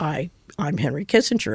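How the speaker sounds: furious outburst, stumbling at the start. Retelling being refused a reserved table, as Henry Kissinger, mock-furious. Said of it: "And he's furious".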